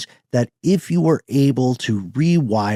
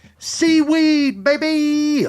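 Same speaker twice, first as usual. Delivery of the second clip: put-on very high, shrill shout with "baby" drawn out. Calling out a pick to the group, yelled. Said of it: "I'll just yell it this way".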